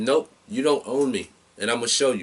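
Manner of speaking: plain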